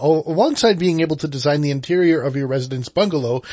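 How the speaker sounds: ordinary talk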